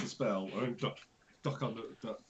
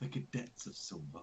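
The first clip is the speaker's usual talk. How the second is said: low, soft mutter under the breath; 4 semitones lower, 8 dB quieter than usual. Muttering a correction in character during the rescue scene: muttered under her breath. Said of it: "Under her breath".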